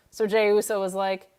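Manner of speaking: normal talking voice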